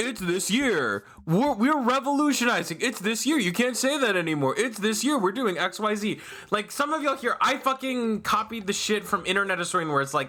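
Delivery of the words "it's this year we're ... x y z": mocking, dim-witted dumbass voice. Mocking someone who keeps saying it's this year: imitating a dumbass mockingly. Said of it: "some dumbass saying".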